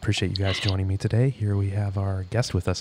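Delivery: stoic golf-commentator voice. A podcast guest, just introduced, mimics a radio host: NPR-style golf voice. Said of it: "It's like that golf voice".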